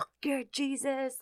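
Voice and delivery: eerie, possessed-sounding, very high, hushed voice. Retelling what a woman suddenly said, imitating a voice not her own. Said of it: "in this voice that was not hers".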